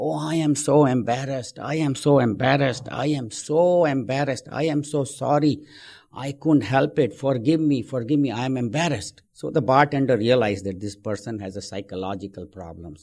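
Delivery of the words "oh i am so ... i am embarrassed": put-on crying man's voice, slower. Telling a joke about a man at a bar, acting out a man crying. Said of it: "this man starts crying".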